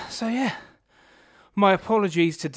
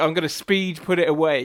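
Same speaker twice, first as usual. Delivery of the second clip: normal talking voice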